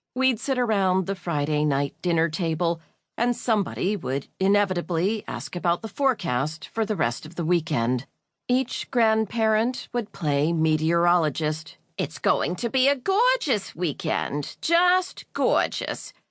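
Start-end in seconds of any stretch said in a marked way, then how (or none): 11.9-16.1 put-on heavy Brooklyn accent, sing-song and swooping. Retelling Grandma Harriet's weekend forecast at dinner: strong Brooklyn accent. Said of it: "with her strong Brooklyn accent".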